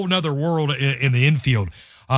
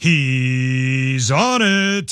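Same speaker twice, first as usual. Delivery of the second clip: put-on booming voice, much slower. Recall what he would say during a really good qualification run, in a big booming Tom Carnegie voice. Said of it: "in this big booming voice would say".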